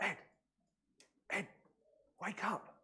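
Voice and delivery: slow, high-pitched whisper. Retelling a story where one man wakes another at night; whispering. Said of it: "he whispers to Ed".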